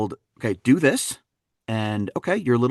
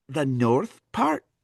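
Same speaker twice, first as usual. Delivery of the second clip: put-on Aberdeen Scottish accent; 3 semitones higher, 3 dB quieter than usual. Retelling being quizzed by a woman on which part of scotland, answer in put-on scottish accent. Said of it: "I know that accent".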